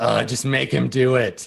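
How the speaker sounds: put-on bratty preteen girl voice with an eye-roll tone. Voicing a girl who rolls her eyes at an order: preteen girl eye-roll tone. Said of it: "that preteen girl, like, eye roll".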